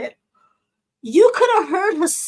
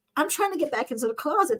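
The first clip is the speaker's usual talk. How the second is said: normal talking voice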